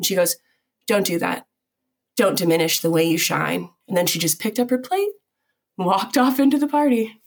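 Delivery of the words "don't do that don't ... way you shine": mock serious, intense tone. Retelling how she stopped and looked her in the eyes: imitating a serious, intense tone. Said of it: "got super serious and intense".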